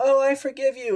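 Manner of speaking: high, sweet mock forgiving coo.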